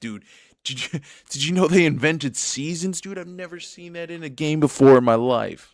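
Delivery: very loud, high, hyped-up gushing yell. Streamer thanking viewers and reading chat, loud and hyped. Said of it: "This is my voice being loud".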